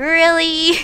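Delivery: stretched long, drawn out, dripping super sarcastic. Explaining a super sarcastic reply: sarcastic drawn-out really. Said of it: "I'm just being super sarcastic and dragging it out like".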